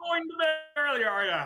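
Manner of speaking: very high, loud, booming Irish accent. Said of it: "You almost slipped into a little Irish accent there".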